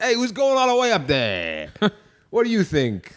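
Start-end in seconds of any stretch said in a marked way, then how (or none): 0.0-1.7 failed, bad Boston accent attempt, pitched up. Hyping who will make it to the top of the climb, in a bad Boston accent. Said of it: "I can't do a Boston accent".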